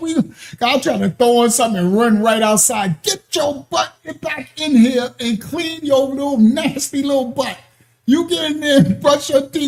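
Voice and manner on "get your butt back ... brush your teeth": put-on scolding grandma voice. Retelling what their grandmother said to them, imitating grandma cursing someone out. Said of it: "but she do curse you out".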